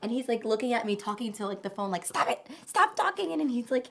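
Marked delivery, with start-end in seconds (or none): 2.0-3.3 play-acted, very high, raspy, scolding yell. Recounting yelling at her dog through the doggy cam, retelling yelling at the dog. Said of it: "I'm like yelling at Milo to stop barking".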